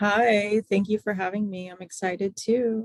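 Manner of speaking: flat, unenthused monotone delivery. Guest greeting the podcast hosts, flat monotone voice. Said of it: "have a monotone voice".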